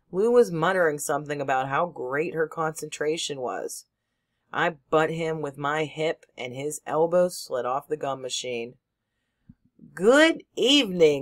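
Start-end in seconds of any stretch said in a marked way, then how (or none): 9.9-11.2 raised, showy, self-admiring, showing-off voice. A narrator reads a character's greeting, in his best ain't-i-fine voice. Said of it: "in his best ain't I fine voice".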